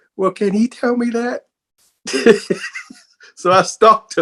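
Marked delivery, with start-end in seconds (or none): 0.2-1.5 meek, timid voice pitched way up. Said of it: "I said very meekly".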